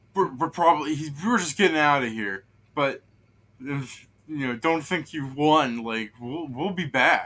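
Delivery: scared, spooked character voice. Voicing a scared grappled enemy bluffing as it retreats: scared character voice. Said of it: "as he's scared at you, he goes".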